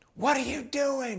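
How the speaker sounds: put-on very high, shrill, piercing, outraged shrieking. Retelling how a lady on a mountain overlook yelled at a friend: imitating a woman screaming. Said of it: "She started screaming at him".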